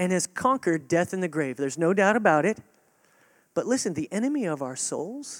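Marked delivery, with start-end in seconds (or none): none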